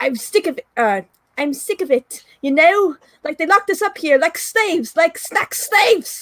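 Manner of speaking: high, amateurish put-on Scottish accent. Reading a ranting character's lines in an attempted Scottish accent. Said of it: "I don't really know how to do a Scottish accent".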